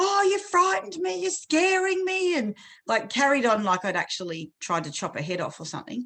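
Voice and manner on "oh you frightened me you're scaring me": put-on high, crying little girl voice. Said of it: "she started crying and she was like".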